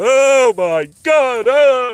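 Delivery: very high, loud, shrill, drawn-out frightened scream. Retelling waking to a raccoon sitting on their chest: retelling a frightened scream. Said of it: "Open my eyes and I scream".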